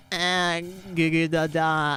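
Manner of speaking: very slow, drawn-out infant babbling. Describing babies being taught to pay taxes, the speaker voices them: babbling baby voice. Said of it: "a bunch of babies ... everyone just goes like".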